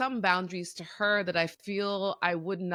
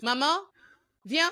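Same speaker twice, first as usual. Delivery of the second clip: mock curt, high-pitched, bossy barked delivery; 8 semitones higher, 3 dB louder than usual. Retelling how a daughter calls her mother over: imitating a child barking orders. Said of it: "it's like orders".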